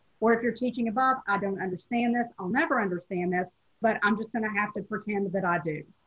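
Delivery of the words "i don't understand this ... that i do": ordinary talk, nothing marked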